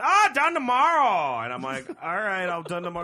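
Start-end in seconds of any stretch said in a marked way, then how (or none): 0.0-1.4 blurted out, very loud and high. Retelling what a woman said about when the clothes would be done, really loud. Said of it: "she's like saying it really loud".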